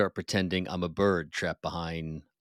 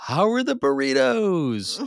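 shrill, booming, high-pitched yell at full volume; 7 dB louder than usual. Retelling how a companion yelled on arriving at the restaurant, retelling a yell at full volume. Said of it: "yells at the top of his lungs".

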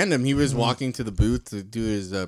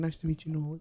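very quiet, soft, understated, pitched up; 5 semitones higher, 9 dB quieter than usual. Retelling how a man greeted them after a picture, very quiet voice. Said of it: "All very quiet".

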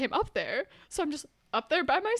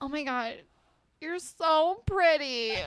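put-on very slow, drunken, gushing girl's voice; 4 semitones higher than usual. Retelling meeting a drunk girl in a frat hallway: imitating a drunk girl. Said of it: "this drunk girl in the middle of the hallway".

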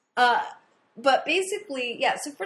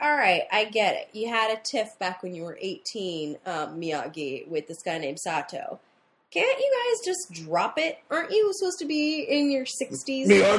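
ordinary talk, nothing marked

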